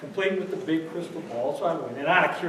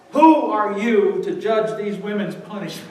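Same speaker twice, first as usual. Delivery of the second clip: normal talking voice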